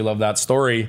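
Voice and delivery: ordinary talk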